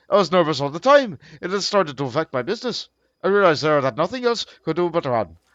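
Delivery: plain reading voice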